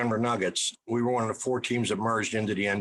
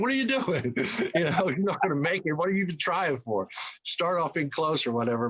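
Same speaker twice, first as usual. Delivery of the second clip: high-pitched, scolding, yelled delivery; 6 semitones higher than usual. Retelling what gets yelled at kids shooting from half court: imitating own yelling. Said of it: "I start yelling at 'em".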